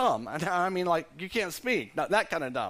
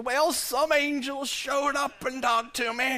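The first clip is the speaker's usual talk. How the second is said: older put-on voice, slightly raised pitch; 8 semitones higher than usual. Acting out Zechariah telling his wife about the angel: older Zechariah voice. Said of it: "change the voice a little bit".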